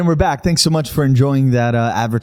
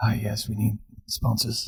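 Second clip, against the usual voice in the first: very quiet, hushed, flat Birmingham gangster voice; 11 dB quieter than usual. Acting out a call to find podcast sponsors, in a Thomas Shelby voice. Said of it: "That was very Peaky Blinders".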